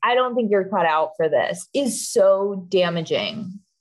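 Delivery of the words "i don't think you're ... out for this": ordinary talk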